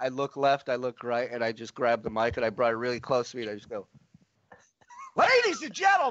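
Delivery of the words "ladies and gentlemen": mock all-out scream, very high-pitched. Grabbing the mic to wake a man asleep in the front row, retelling a scream into the mic. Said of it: "I screamed it as loud as possible".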